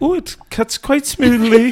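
very high, genteel, put-on queenly voice. Retelling a cake-cutting meme, imitating the Queen. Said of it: "sounded a little bit like Missus Doubtfire".

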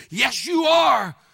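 put-on old woman voice, loud, high-pitched top-of-the-lungs screaming. Retelling how a grandmother insisted on church: imitating grandmother screaming. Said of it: "my grandmother screamed at the top of her lungs".

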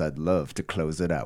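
deep, low bass-register voice. Closing out the episode, the speaker signs off in a bassy voice. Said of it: "with a bassy voice like this".

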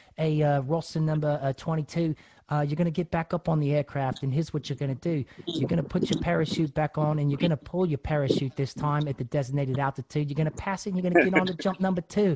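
clumsy, pretty bad put-on British accent. Retelling what his parachute instructor told him after landing, bad British accent as Whitcomb. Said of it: "I got a pretty bad British accent".

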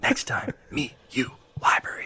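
whispering. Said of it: "they're, like, whispering".

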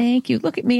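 very high voice, choking with emotion. Asked for closing words to the audience, the guest thanks the host, choking up. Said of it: "I'm choking up".

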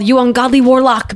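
mock, put-on loud shouted outcry. Retelling a scene where people go up to room thirty-six: imitating a yell. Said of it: "They yell".

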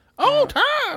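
loud, shrill, very high old-cartoon woman voice. Recalling how someone imitated a cartoon, doing the female voice from Tom and Jerry. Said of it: "remember how the female from Tom and Jerry was?".

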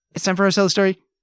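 speedy tempo. Asked to say a segment's intro line with a speedy tempo, very fast. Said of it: "can you say it with a very speedy tempo?".

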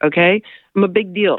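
ordinary delivery

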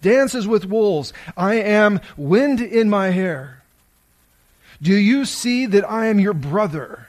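shouted warrior voice. Retelling a film scene, a warrior on a cliff calling to his brother: imitating a warrior shouting farewell. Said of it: "He's shouting this".

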